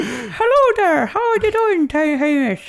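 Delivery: joking put-on Irish accent. Showing an Irish accent done with bottom teeth over top lip: Irish accent. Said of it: "issues with the Irish community".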